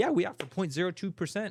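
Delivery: excited bank clerk voice, high, loud, bright, eager.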